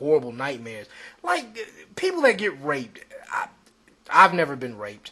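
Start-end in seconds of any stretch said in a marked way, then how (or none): 0.0-0.9 put-on mocking, sneering tone, lower and quieter. Quoting how a person reacted to the speaker's story, imitating a mocking tone. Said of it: "the person says mocking tone".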